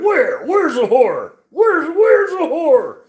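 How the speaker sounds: very high, loud, repeated calling out. Retelling how Endless Mountain Outdoors reacted to the horror talk: imitating Endless Mountain Outdoors. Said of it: "He's like".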